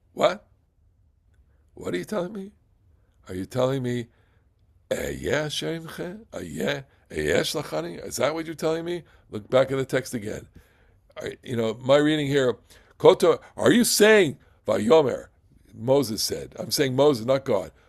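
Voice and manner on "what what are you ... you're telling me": soft, playful delivery played for laughs. Acting out Moses questioning what God just said: comic voice as Moses. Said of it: "here I would like to be a little comedian".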